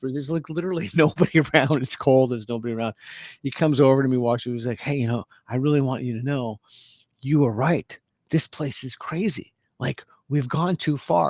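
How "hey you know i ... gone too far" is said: put-on hushed whisper. Retelling what a man came over and said to them, imitating a whisper. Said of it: "he kind of whispers".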